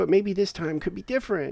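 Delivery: put-on whimpering, very high little voice. Acting out his reflection scolding him in the mirror: acting out whimpering. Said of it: "And I'm whimpering and going".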